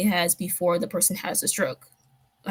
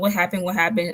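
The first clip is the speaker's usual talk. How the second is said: acted, frantic, panicked voice. Recounting when mom pulled the car over after a call, retelling own panic. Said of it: "I'm panicking".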